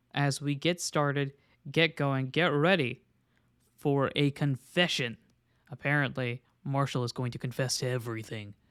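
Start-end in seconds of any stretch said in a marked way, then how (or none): 6.7-8.6 deep, vaguely foreboding, dramatic, semi-ominous voice. Opening a YouTube confession episode, in a deep, semi-ominous voice. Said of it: "as I say it in a deep voice that sounds semi-ominous".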